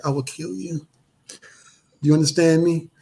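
close, half-whispered voice. Retelling a threat made at dinner: retelling a half-whispered threat. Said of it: "And I whispered in her ear".

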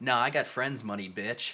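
ordinary talk

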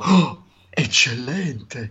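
acted, overblown, over-the-top gasping voiceover delivery. Retelling how a line was read before, imitating own over-the-top read. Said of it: "the Eccellente was much more".

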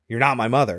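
plain

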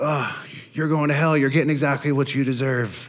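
high-pitched yelling.

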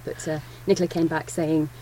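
ordinary delivery

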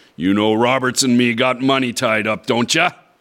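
spoken in a hiss. A man grips the narrator's arm and presses him, hissed. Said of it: "he hissed".

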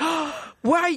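high, startled voice, caught off guard.

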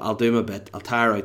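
ordinary delivery

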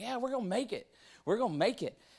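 high, excited cheering. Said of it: "everybody starts to get excited".

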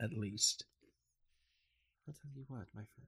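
flirtatious dark elf madam voice. A game master voices a drow woman behind a counter: drow woman character voice. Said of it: "uh, a drow woman sitting, sitting, uh, behind the counter. She has, uh, very noble looking clothing".

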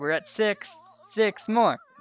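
peppy cheerleader voice. In a drama scene, a character counts down like a cheerleader. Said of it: "you sounded like a cheerleader".

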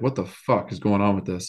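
ordinary delivery

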